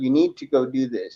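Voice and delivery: play-acted steady, firm, insistent tone, no give. Retelling what a voice told him to do: imitating a firm voice. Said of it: "And they'd be firm".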